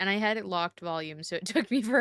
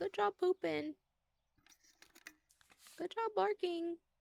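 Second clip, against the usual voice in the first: put-on very high, soft, small childlike little-girl voice; 11 semitones higher, 7 dB quieter than usual. Quoting what a little girl says, imitating a little girl. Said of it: "like that little girl who's like".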